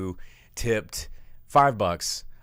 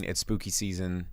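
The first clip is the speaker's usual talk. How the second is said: usual speaking voice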